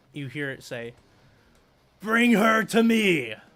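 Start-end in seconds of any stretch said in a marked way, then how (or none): 2.0-3.3 very loud, slow, drawn-out booming pronouncement. The game master voices a call from inside the fortress in a loud booming voice. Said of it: "loud and booming".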